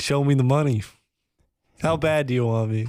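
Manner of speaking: usual speaking voice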